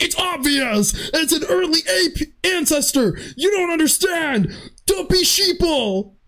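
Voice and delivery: very high-pitched, shrill talk-show-style ranting yell. Mocking how people yell on InfoWars, imitating InfoWars conspiracy yelling. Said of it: "just yelling like".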